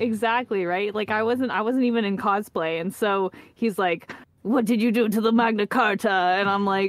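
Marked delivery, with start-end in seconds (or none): 4.4-6.1 terrible, bad put-on French accent. Retelling what a man asked them at a panel, in a terrible fake French accent. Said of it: "terrible attempt at a French accent".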